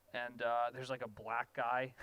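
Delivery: ordinary talk, nothing marked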